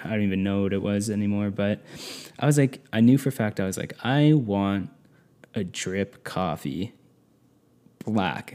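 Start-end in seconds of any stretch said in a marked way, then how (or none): 4.0-8.6 put-on smug, self-satisfied voice, very slow and drawn-out. Retelling ordering from the waiter, imitating a smug tone. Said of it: "so smug".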